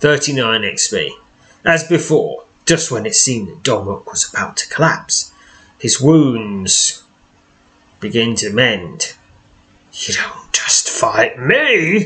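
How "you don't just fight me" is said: pitched-up thundering snarl, like a tree creature. Narrating a fight, the storyteller voices the ancient tree Domrock: Domrock's thundering snarl. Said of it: "he snarls, his thundering voice echoing".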